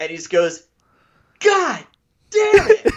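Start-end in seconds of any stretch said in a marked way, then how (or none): 1.4-2.9 very high-pitched, fed-up, furious outburst. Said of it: "he was so mad".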